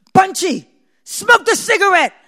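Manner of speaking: very loud, high, booming bellowed shout. Recalling dropping a cigarette mid-scene and being shouted at, retelling a booming shout. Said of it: "this booming voice".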